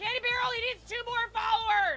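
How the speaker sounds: shouting excitedly. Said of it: "I'm sorry I'm yelling".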